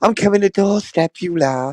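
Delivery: mockingly gentle, soft-spoken, mocking voice. Ranting about someone, mocking what he says: mocking Dodgy Dave's soft voice. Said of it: "Dodgy Dave with his soft voice".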